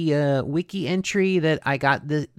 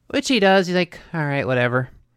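usual speaking voice

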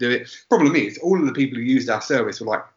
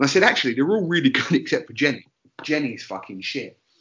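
usual speaking voice

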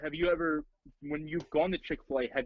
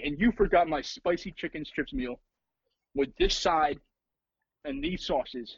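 ordinary delivery

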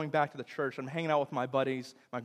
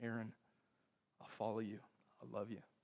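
very quiet, hushed, tender, gracious, loving tone; 4 semitones lower, 15 dB quieter than usual. Aaron recalls her looking into his eyes, imitating a gracious, loving tone. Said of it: "in a gracious, loving tone".

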